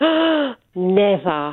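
astonished gasp on "never". Performing a line on request after a gasp: gasping shocked "never". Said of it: "gasp and say never".

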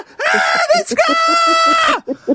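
put-on young boys' voices screaming in panic.

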